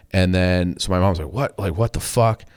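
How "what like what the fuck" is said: alarmed, panicked blurt. Retelling a mother answering a threatening scam call: imitating mom panicking.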